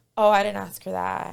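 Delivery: ordinary delivery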